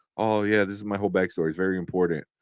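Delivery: ordinary talk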